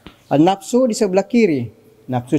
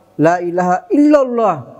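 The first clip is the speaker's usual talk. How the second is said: illallah said with the heaviest stress. Explaining where the stress of the phrase falls: stress on illallah. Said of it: "illallah tekanannya di situ".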